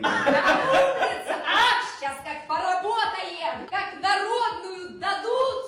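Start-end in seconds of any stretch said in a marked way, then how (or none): 0.0-1.4 loud, laughing, shouted cheer. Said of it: "Ты чё орёшь?".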